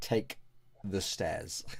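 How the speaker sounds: flat deadpan voice. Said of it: "she was just like".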